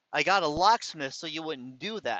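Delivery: plain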